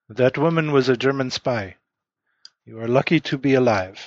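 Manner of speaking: very formal, stiff, stilted by-the-book delivery. A game master voices a policeman addressing two players: very formal, stilted. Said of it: "very formally, very stilted".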